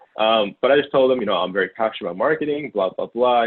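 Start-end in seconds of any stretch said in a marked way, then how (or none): none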